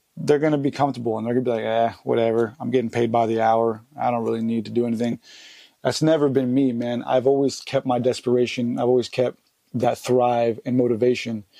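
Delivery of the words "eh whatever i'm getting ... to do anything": ordinary delivery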